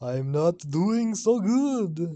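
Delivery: loud vampire drawl with good drawn out. Improvising a scene opposite a friend playing the devil, answer in a Dracula voice. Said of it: "I can only do Dracula".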